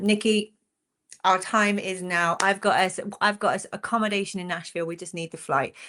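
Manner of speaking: ordinary talk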